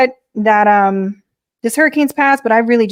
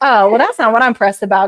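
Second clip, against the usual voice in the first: plain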